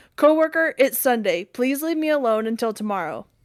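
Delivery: ordinary delivery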